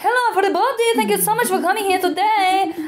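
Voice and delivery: very high, badly faked Spanish accent. Recalling a holiday, speaker imitates people greeting everybody, very bad accent imitation. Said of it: "that's a very bad accent".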